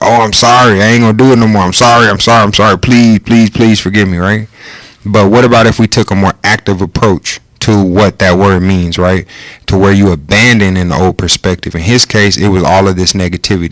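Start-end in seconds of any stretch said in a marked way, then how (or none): 0.0-4.2 put-on groveling, pleading, apologetic tone. Acting out how people usually picture repenting: mock pleading apology. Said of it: "Usually we think of repenting like".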